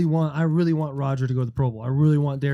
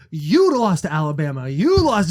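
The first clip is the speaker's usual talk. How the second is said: swooping, animated hollering yell; 4 dB louder than usual. Retelling teammates yelling at dudes in the cafeteria: imitating someone yelling.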